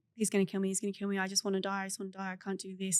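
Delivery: mock panicked voice. Retelling a complete panic attack: retelling own panicked words. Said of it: "I just had a complete panic attack and I was like".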